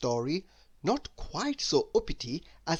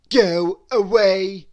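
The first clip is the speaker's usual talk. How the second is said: very loud, rude, high brush-off tone; 5 semitones higher, 12 dB louder than usual. Reading a story, Mister Uppity answers a goblin who greeted him: rude. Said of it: "said Mister Uppity, rudely".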